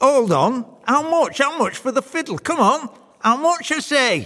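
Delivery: eager, clamouring, pitched very high. The soldier leaps up to claim his fiddle from the devil, clamouring. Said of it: "clamours to make his claim".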